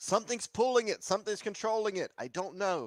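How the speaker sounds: very high, alarmed shouted yell. Playing a character yelling that something controls the beast: yelling. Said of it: "I'm gonna yell".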